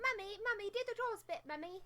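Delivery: put-on high, soft little child voice. Asked to redo a bit, the speaker mimics the other person's request: little child voice. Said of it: "You want me to do it like a little child?".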